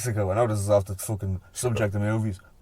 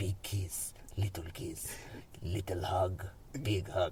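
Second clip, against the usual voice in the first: put-on whispered, slow, drawn-out Mexican accent; 3 semitones lower, 13 dB quieter than usual. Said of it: "I just remember the Mexican voice".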